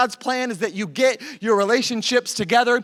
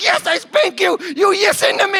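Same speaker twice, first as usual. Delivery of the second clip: put-on high, childlike, sassy back-talking voice; 8 semitones higher, 5 dB louder than usual. Retelling an argument with a toddler, imitating own childish talk. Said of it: "And I start talking like a child".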